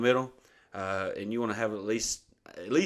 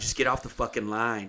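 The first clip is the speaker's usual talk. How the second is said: mock-angry, heated snapping outburst. Recounting what you told her while you were fishing, retelling a heated outburst. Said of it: "I'm getting fucking heated".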